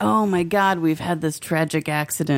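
ordinary delivery

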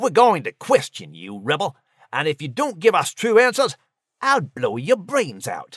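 swooping hiss through clenched, gritted teeth. An officer holding a pistol to the Patriot's head threatens him: hissed through gritted teeth. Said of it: "hissed through gritted teeth".

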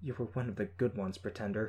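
plain

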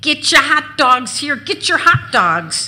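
loud, high-pitched food hawker's calling yell. Selling hot dogs to a crowd, imitating a yelling hot-dog vendor. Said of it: "I imitate the guy who yells to the crowd".

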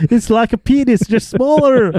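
high, piercing mock movie heroine scream.

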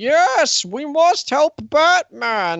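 very high, very slow, badly done villain voice. Recalling what someone said, the speaker does a bad Bane impression. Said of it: "a really bad impression of Dark Knight Rises Bane".

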